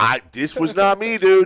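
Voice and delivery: mock voice pushed high and climbing. Retelling what was said to a coworker after the timer: voice raised. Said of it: "I heightened my voice a little bit".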